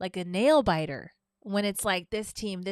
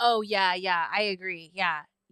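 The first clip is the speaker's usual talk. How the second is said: put-on, mock sarcastic tone. Retelling how they answered everything the listener said, retelling sarcastic agreement. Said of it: "hundred percent sarcasm".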